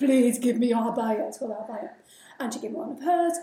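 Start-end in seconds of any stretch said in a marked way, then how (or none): 0.0-1.3 put-on loud, pleading, begging voice. Retelling knocking on a neighbor's door for an abaya, retelling a plea. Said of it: "I knocked on the door and I begged".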